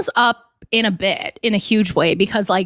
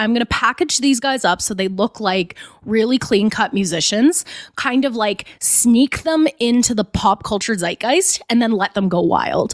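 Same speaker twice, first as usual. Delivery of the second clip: usual speaking voice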